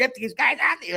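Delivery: frantic, furious shriek, pitched very high. Retelling how a golf pro screamed at the security guard: imitating someone screaming. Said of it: "he's screaming at the security guard".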